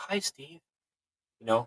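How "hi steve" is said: faint, hushed, soft, high whisper. Retelling how a glowing entity bent down and greeted him: imitating a whisper. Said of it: "kind of in a whisper".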